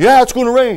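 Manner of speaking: very high-pitched, loud, insistent, adamant tone. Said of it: "why do you say it so adamantly?".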